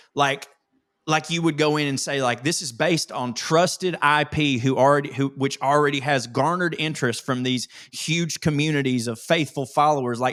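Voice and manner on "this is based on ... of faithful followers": ordinary talk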